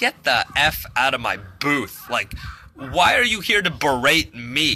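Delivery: ordinary delivery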